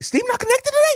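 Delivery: very high, cracky put-on voice. Retelling a teammate's question before the show, high, cracky Nikki impression. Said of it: "Pretty good impression".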